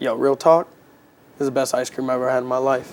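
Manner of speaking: ordinary delivery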